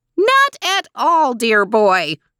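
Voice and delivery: sweet screech, pitch swooping up and down. Narrating a story, Mrs. Coronet replies to the boy, screeching. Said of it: "she screeched in reply".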